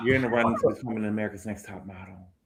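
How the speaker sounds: soft, hushed stage half-whisper. Showing how a line about the next top model should be said: half-whispered. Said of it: "You gotta whisper when you say".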